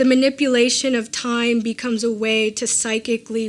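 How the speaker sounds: ordinary delivery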